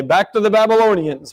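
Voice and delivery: mock big, resounding, booming teacher voice. Retelling a calculus teacher's morning greeting: imitating Buddy Payne's booming voice. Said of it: "with his booming voice".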